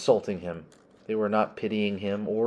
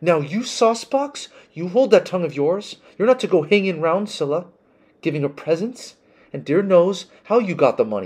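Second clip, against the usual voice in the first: stern, bossy scolding, raised voice, high pitch; 9 semitones higher, 6 dB louder than usual. Narrating a mother warning a young man away from her girls, scolding.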